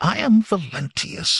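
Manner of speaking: very high voice straining to stay steady. Reading a young man's reply to the Cimmerian's question, high strained voice. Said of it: "he said in a high voice that strained for steadiness".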